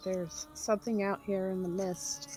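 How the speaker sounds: soft, hushed whisper, barely voiced. Voicing a player character in a misty game scene: whispering. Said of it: "She's gonna whisper".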